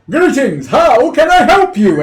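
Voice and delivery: loud, high calling-out voice. Voicing a talking door knocker that calls out to visitors: talking door greeting. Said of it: "it seems to really open its mouth and call from it".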